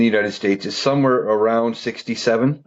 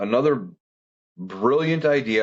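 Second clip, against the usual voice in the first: heavy, dripping sarcasm laid on thick. Criticizing a government housing idea with heavy sarcasm. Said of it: "how much sarcasm was just put in that".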